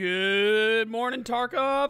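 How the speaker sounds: groggy cracking voice, drawn-out "good". Just woke up, greeting the Tarkov audience, with a voice crack. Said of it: "that's a little bit of a voice crack there".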